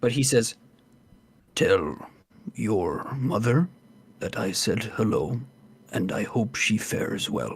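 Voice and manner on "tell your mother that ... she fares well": low, hushed whisper. Game master voicing a character speaking so only one player hears, whispering. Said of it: "And he whispers".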